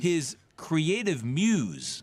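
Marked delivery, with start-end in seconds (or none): 1.2-2.0 sassy, scare-quote emphasis on the word "muse". Calling a coach's young partner his muse: sassy stress on MUSE. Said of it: "that ooh in muse was a lot like the D I put in business".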